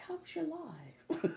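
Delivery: very high, slow, drawn-out, worried, concerned voice. Retelling how he asks about the live stream: imitating a concerned question. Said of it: "he was so concerned".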